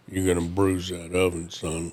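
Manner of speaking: put-on deep bass voice. Quoting a voice he liked that came across: imitating a deep bass voice. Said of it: "it was that deep of a bass voice".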